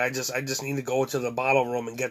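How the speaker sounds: plain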